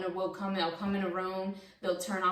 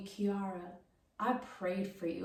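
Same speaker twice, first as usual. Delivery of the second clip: put-on powerful, forceful tone, quieter; 6 dB quieter than usual. Retelling what her mother told her when she came to her crying, imitating mom's powerful speech. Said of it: "she spoke to me with such power".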